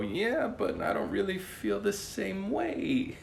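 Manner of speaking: put-on very high, crackly, creaky old grandma voice. Acting out the other person's reply after being told they're appreciated, in an old grandma voice. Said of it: "I turned that into a grandma voice".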